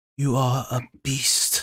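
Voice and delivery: hushed stage whisper. A lady leans close as a character walks past her, half-whispering. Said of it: "she leans close and whispers".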